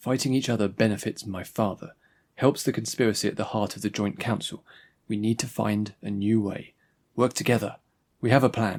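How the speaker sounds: plain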